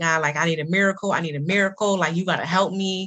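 tearful voice, audibly crying throughout. Speaker retells praying to god while preparing an office opening; retelling a crying prayer. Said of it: "as I'm crying, I'm praying out".

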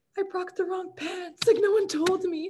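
acted-out crying, voice very high and tearful. Speaker retells going up to the kicking coach, acting out crying. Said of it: "And I'm like crying".

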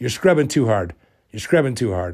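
ordinary delivery

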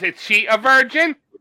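put-on slow, menacing monster-movie German accent. Imagining a character from a film asking a question: scary German guy from Monster Squad voice. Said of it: "a scary German guy from Monster Squad came out and he goes".

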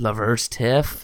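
slipping into West Country accent. Bantering in a group conversation, in a put-on West Country accent. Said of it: "what was with the accent?".

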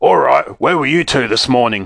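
angry, mad, growling voice. Narrating Mr. Krupp questioning the two boys in his office, growled. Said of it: "he growled".

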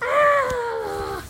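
high, loud, excited scream.

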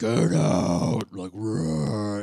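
exaggeratedly deep, super low, loud cartoon voice. Speaker describes how a film version made Pooh sound, super low Winnie the Pooh voice. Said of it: "they made it super low".

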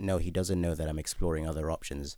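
normal talking voice

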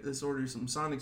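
normal talking voice

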